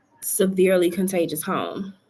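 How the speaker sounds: normal talking voice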